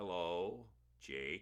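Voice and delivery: very slow, drawn-out, half-asleep, sleepy delivery. Reading Mike's greeting to Jake from his bed, very slowly. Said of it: "he said very slowly".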